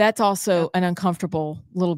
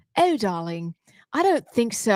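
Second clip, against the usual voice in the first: put-on posh, queenly, regal British accent; 4 semitones higher than usual. Answering a compliment about sounding regal: put-on regal British accent. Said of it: "She's very much the queen".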